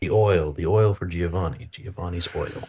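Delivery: theatrical whisper. Playing a half-orc in a roleplay scene, whispering to another character: stage whisper. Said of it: "Maybe more like a stage whisper".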